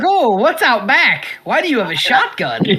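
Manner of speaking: keen, excited, eager enthusiastic voice. Acting out how Eddie reacts to being taken out back: enthusiastic Eddie voice. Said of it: "Eddie's just enthusiastic".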